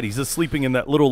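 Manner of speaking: ordinary talk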